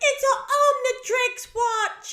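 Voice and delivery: tiny squeaky voice, high, loud, very drawn out. Recalling him opening his gifts, imitating a squeaky little voice. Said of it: "it was so squeaky and so little".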